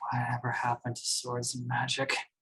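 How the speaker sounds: sighing put-on voice. A player speaking as the character Rowan in a role-play scene, Rowan sighing. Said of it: "Rowan just sighs and just goes".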